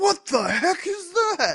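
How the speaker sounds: high, slow shocked outburst.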